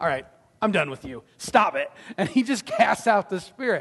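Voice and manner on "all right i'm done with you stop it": mock downright annoyed, low, fed-up brush-off. Retelling a story, acting out a man's words to a woman who keeps yelling: mock-annoyed. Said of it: "Paul just gets downright annoyed".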